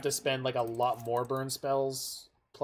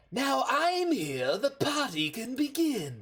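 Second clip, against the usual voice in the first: very high villain voice, swooping all over; 10 semitones higher than usual. Reading a card's line again after being told to sound more like Joker, Joker voice. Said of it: "you could have more of a Joker voice".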